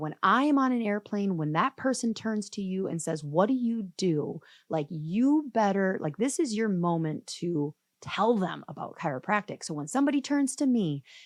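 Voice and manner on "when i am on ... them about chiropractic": usual speaking voice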